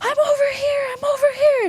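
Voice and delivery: put-on very high, stretched-out, drawn-out scream. Retelling calling out to the police while being grabbed: retelling a scream. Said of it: "I start screaming".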